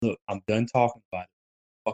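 rapid half-whisper under the breath. Speaker retelling a silent argument with her, retelling a half-whisper. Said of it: "and i whisper".

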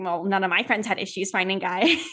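mock cheeky, sassy voice. Retelling a reply to mom about dating: retelling a sassy reply. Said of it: "I'm being sassy back".

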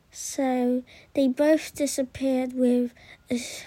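plain

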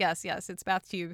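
normal talking voice

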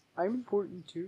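very hushed, quiet, dropped deep put-on voice. Redoing a quoted line while joking around: put-on deep voice. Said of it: "let me get my deep voice on".

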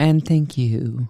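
put-on radio announcer voice. A co-host, prompted to try it, signs off in Midnight Radio voice. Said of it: "Midnight Radio voice, go".

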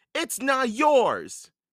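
very high, shrill, urgent yell. [name] calls out to Captain Bones, shouting. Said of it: "Shouted [name]".

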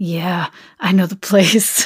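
slow, drawn-out, creepy coaxing voice. Reading a driver's line aloud in a story: sounding like Ken Kaniff. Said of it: "You sound like Ken Kniff from the internet trying to lure your kids".

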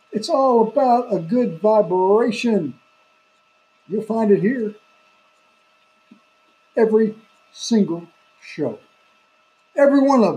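worked-up, fired-up, excited, hyped delivery. A host promoting the show and podcast to listeners, getting worked up. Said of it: "I'm getting worked up here".

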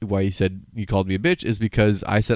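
plain

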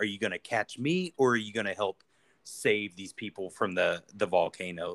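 ordinary delivery

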